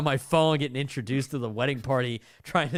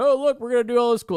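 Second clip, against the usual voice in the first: put-on hype DJ voice, much higher and louder; 10 semitones higher, 6 dB louder than usual. Retelling how the DJ talked to them while they waited in line, DJ voice. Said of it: "Is this D J voice?".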